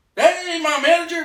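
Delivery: play-acted very high, heated objecting tone. Retelling a sudden reply to a misheard word: imitating Hassan Campbell getting heated. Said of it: "he got really heated".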